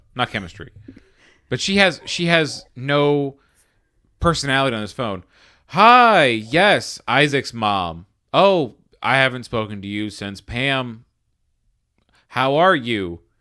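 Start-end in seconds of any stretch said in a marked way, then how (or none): 5.7-13.2 lifeless, flat, robot-like reading like a machine. Imitating a woman's line delivery on a phone, sounding like a robot. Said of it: "She sounds like a robot".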